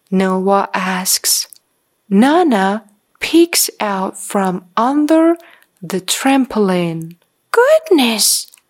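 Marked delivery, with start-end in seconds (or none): 7.5-8.4 high, cried-out word. A narrator reads a grandmother's reply to a boy, crying out. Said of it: "she cries".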